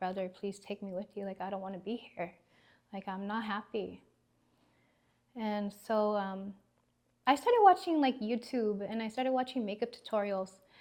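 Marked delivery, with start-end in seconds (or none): 0.0-4.0 acted crying, pleading tone, much quieter. Recalling lying on the bathroom floor begging a brother, retelling a crying plea. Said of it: "I was just crying like".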